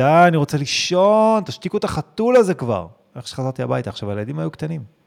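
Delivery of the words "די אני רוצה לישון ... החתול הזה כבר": put-on fed-up angry shout, loud and high. A father recalls shouting at home after stomach surgery, retelling a shout. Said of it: "אז צעקתי כזה בבית".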